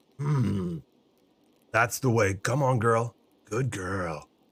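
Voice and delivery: deep, unhurried cowboy voice. Speaker imitating the Red Dead Redemption cowboy talking to his horse: Arthur Morgan talking to his horse. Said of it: "he talks like that to his horse".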